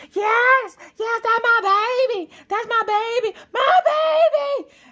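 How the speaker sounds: shrill, very high, loud cheering. Mother retelling cheering at her daughter's gymnastics performance: reenacting loud mom cheering. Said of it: "I was the loud mom in the bleachers".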